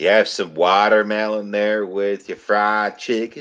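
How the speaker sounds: fake Southern accent attempted over Australian accent. An Australian performer in a scene speaks in a fake Southern accent. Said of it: "hearing the Aussie try and sound with the talk with the Southern accent".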